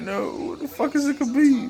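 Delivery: put-on high-pitched puzzled kid voice.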